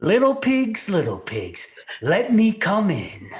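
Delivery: slow, loud, singsong taunting voice.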